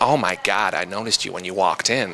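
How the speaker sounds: bad, lame put-on American accent. Retelling what a woman said to him in a London nightclub: bad American accent. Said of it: "that's my lame-ass American accent".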